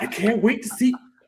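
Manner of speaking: starstruck fan voice, pitched very high. Mocking the idea of a fan waiting at a resort: imitating a fan. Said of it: "No fan is waiting for Mike Vrabel, like".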